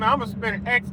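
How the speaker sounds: normal talking voice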